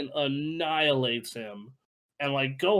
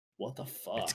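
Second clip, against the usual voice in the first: put-on condescending villain voice, lower and quieter; 5 semitones lower, 11 dB quieter than usual. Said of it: "he has this voice that is just like".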